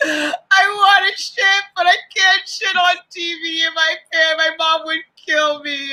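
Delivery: put-on crying through every word, high and slow. Retelling what Cheyenne said during the Rivals final: imitating Cheyenne crying. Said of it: "she's crying".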